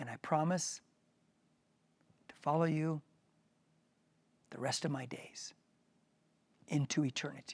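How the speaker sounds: slow, halting, phrase by phrase with pauses. Leading listeners through a prayer for them to repeat, slow with pauses. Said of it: "I'm going to say it slow with breaks".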